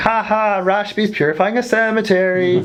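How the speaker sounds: mocking put-on puppet-character voice. Mimicking someone who first recommended the place and now mocks it: mocking Muppet-like voice. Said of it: "With that like Muppet tone of voice too".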